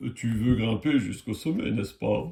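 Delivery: put-on voice of a big old giant tree. Narrating a story aloud, the speaker tries doing the voice of a big tree. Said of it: "Je vais essayer de faire la voix d'un grand arbre".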